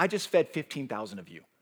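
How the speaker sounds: put-on sarcastic, pointed, told-you-so tone. Imagining how a sarcastic Jesus would answer the crowd: sarcastic Jesus. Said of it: "if he was, like, a sarcastic person".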